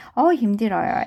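usual speaking voice

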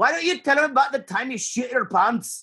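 put-on Scottish accent, very high and angry. Quoting another line, the speaker does a Scottish impression. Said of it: "my Scottish impression".

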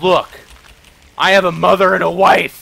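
high, loud, mock outraged indignant tone. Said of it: "I always get someone who's like".

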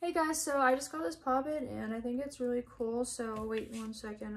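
listless, very quiet, low-energy mumbling. Demonstrating the wrong way to review a poppet on video: mumbled, low-energy delivery. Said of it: "this is the wrong way to do it. ... I'm mumbling".

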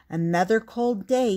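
ordinary delivery, nothing marked

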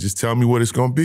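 quick joking put-on tone. Retelling what he said to a coach who finally came down, retelling a joking remark. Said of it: "I jokingly said".

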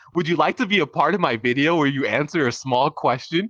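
mechanical, robot-style delivery. Retelling how they asked people to be in a video: imitating own AI-bot-like voice. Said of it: "I would say it just like that, in that voice".

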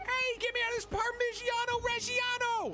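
tiny squeaking rat voice. A rat sinking into the cheese in the background speaks, faint squeaky rat voice. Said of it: "a faint little squeaky noise".

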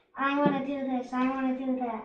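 ordinary talk

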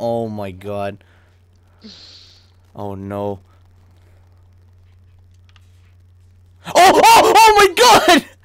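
very loud, very slow, drawn-out terrified cries. Streamer who cannot see and must use a flashlight in the game, terrified. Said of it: "I am so fucking scared right now".

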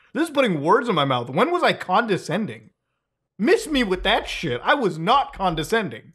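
mildly angry, a bit fed up. Speaker objects to being called condescending, now a little mad. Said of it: "now I'm actually fucking mad a little bit".

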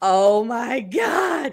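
slow, loud, stunned voice.

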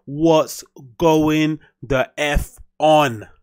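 very slow, drawn-out, stretched, playful delivery.

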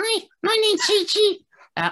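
squeaky little puppet dog voice, very high, bouncing sing-song. Introducing the little dog character he made, in a squeaky Chi Chi voice. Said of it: "he just had a squeaky voice".

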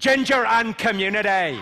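loud Northern Irish Belfast accent. Teaching an audience the Belfast accent with a practice phrase, Belfast accent. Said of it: "the phrase I use to get the Belfast accent right".

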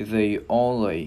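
"only" stretched out very slowly.

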